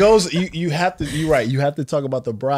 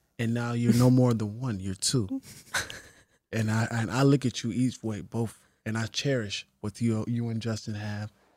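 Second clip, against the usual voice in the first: soft, soft-spoken voice, much quieter; 5 semitones lower, 10 dB quieter than usual. Imitating what the listener is going to say, in a soft voice. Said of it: "with all that soft voice".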